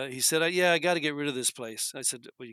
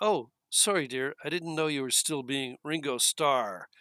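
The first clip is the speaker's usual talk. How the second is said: put-on, very condescending, talking-down tone. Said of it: "kind of very condescendingly".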